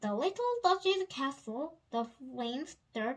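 plain

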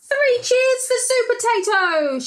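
very high, rousing shout. Narrator reading a story aloud, giving a character's cheer: shouted. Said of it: "shouted Broccoli".

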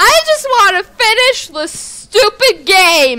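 very high, shrill, exasperated, frustrated shouting. Playing a game and unable to find the last custards, frustrated yelling. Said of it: "I'm frustrated, can you tell?".

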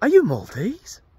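put-on loud British accent, pitched way up. Acting out a stranger asking someone whether they're maltese: british accent. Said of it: "In a British accent, probably".

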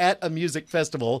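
ordinary talk

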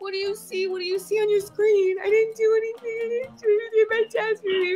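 tearful sobbing. Playing a woman on a phone call who fears her card was stolen, crying. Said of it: "First, stop crying".

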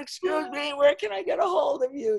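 piercing, very high, loud yell. Retelling yelling down to a swimmer in the water, re-enacting own yell. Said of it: "So I'm yelling down".

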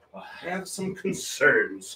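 slow, soft, regal scolding voice. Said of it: "went like this".

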